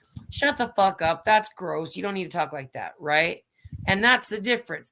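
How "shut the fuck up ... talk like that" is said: acted casual scolding tone. Contrasting how a rebuke would go with another person: retelling own conversational rebuke. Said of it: "it would be conversational".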